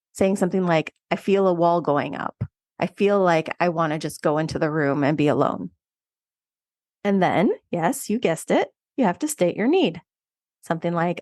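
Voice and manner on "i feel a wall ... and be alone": plain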